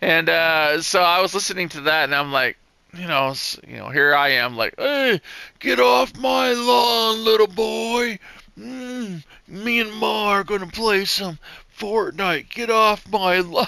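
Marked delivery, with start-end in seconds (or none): 4.8-13.7 put-on slow, pitched-up, cranky grumpy old man voice. Joking about playing games with young kids, grumpy old man voice. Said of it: "the old man type thing".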